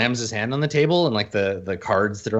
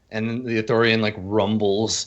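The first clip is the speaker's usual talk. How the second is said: ordinary talk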